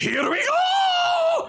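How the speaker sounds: very high shrieking scream, "go" stretched out. Voicing a character who chomps a mushroom and charges: screaming. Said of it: "just screams and runs at you all".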